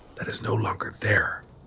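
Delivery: soft, breathy, hushed whisper. A narrator voices a woman whispering to the three listeners: whispering. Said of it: "she sort of whispers to the three of you".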